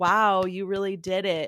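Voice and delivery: put-on, mocking sarcastic tone. Imitating commenters mocking a woman's success: imitating a sarcastic jab. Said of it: "the sarcastic clap of, like".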